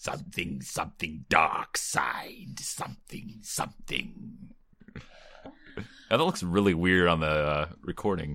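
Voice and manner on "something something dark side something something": soft, low, sinister and menacing breathy whisper. Joking around while recording, doing Emperor Palpatine lines in his voice. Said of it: "I'm just doing Emperor Palpatine lines now".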